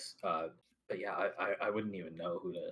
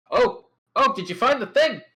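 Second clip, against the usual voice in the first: very high, very loud, shrill calling out; 18 dB louder than usual. Narrating the game, the speaker voices the high priest: raised voice, full mother levels. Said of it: "raises her voice to um to to to, to full mother levels".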